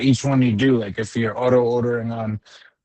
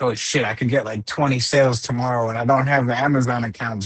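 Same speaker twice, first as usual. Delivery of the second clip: usual speaking voice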